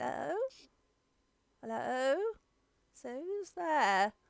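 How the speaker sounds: very small, high little voice from far back. Game narrator voices someone at the back of the attic during a lull: very small voice. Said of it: "you can just hear a very small voice".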